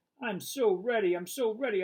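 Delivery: eager, yappy, high excited dog bark. Reading a story aloud, a dog answering its owner: excited bark. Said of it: "I bark, my tail going wild".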